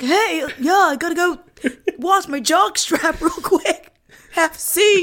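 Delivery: put-on very high, loud caricature of a teenage boy. Retelling the boy's reply to the teen girl: caricature teen boy voice. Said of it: "and the boy's like".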